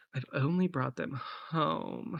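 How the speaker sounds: slight, soft, throaty creak of vocal fry. Voicing a character's line in a role-play scene, with a throaty vocal fry. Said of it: "almost like a vocal fry a little bit".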